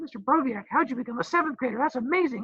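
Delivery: put-on very high, squeaky seventh-grader kid voice. Imitating the listeners asking a question: squeaky seventh-grader voice. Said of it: "sounds like I'm a seventh grader".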